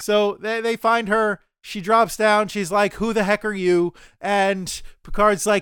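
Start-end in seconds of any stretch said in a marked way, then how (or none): none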